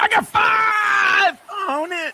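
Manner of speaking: cracking, breaking voice, very high, very slow shout. Speaker quoting a friend's reply in a story, voice cracking. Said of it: "My voice cracked".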